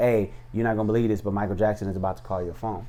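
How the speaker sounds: plain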